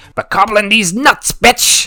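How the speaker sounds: high, loud goblin-voice shout. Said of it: "pick up your sword and shout".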